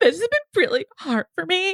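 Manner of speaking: fake, very high, tearless sob, catching breath. Retelling how a woman spoke without real tears, imitating a crying voice. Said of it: "she was speaking in a crying voice".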